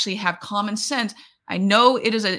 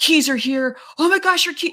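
put-on excited voice, higher pitch; 6 semitones higher than usual. Retelling a salesperson handing keys to a customer: imitating someone excited. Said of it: "And he's just so excited".

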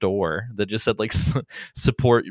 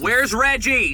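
shrill, very high screaming; 14 semitones higher, 3 dB louder than usual. Screaming outside a company headquarters: screaming. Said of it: "if we could hear us screaming".

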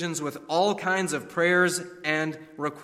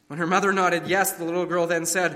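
plain reading voice

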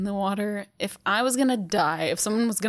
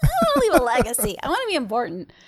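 put-on childish voice, swooping sing-song; 4 semitones higher, 4 dB louder than usual. Speaker recalling their younger self who wanted to be a writer, put-on childish voice. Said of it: "That's my childish voice".

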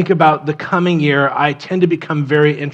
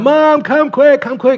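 put-on very high, urgent, frantic children's screaming; 10 semitones higher, 4 dB louder than usual. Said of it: "kids start screaming".

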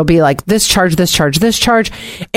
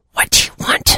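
mock-angry, put-on low voice, quieter. Acting out how the speaker's mom answered pages at work, imitating Monica's low angry voice. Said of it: "that low, quiet, angry voice".

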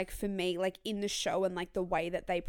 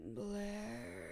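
intense voice with a croak at the end; 11 dB quieter than usual. Mocking how a TV character talks: intense Chuck voice with croak. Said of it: "has to so intensely speak like this".

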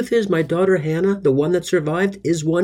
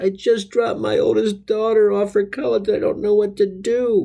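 mock tearful, weepy, sad crying voice; 3 semitones higher than usual. A father retells answering a security officer at his car window, retelling a sad crying voice. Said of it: "in a sad, crying voice".

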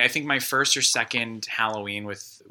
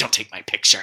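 mock-snide muttering under the breath; 4 dB louder than usual. Retelling what a woman said to a man as she pushed past, snide under-breath remark. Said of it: "says something kind of cunty to him under her breath".

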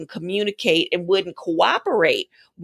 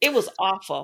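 usual speaking voice

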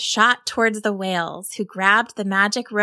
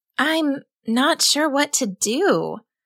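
high, very slow, drawn-out delivery; 5 semitones higher than usual. Reading Rosalie's words to Rowan as she swims back: said quietly. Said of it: "Rosalie said quietly to Rowan".

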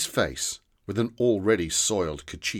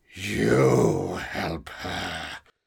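fierce, intense, low, hushed whisper; 4 semitones lower than usual. Speaking while looking directly at one listener, in a fierce, low whisper. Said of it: "He spoke in a fierce, low whisper".

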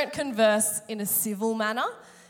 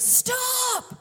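put-on very high, shrill, top-of-lungs scream. Retelling learning to drive when her dad suddenly screamed at her; retelling a top-of-lungs scream. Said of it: "my dad just screams".

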